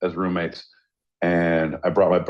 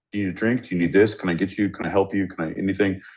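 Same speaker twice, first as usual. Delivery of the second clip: mock anxious, worried, overeager fussing host voice. Describing the speaker's buddy Wes, imitating Wes, worried. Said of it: "Very worried about everyone's well being".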